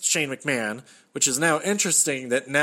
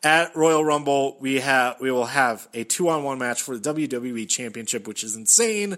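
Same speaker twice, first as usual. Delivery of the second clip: ordinary talk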